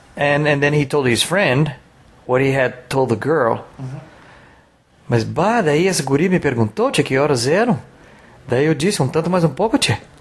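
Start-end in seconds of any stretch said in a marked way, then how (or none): 5.1-10.0 put-on gaúcho southern Brazilian accent. Retelling what a man told his friend about a girl, imitated gaúcho accent. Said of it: "I imitated the accent".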